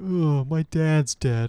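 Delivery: mopey, glum, depressed voice, very slow. Mocking how the new Simba sounded: depressed Simba voice. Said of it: "he sounded like a depressed Simba".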